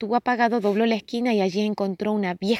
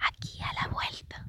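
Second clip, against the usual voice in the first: very hushed, quiet whisper, barely voiced. A woman answers a little boy asking where to eat, in a whisper. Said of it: "susurró la mujer".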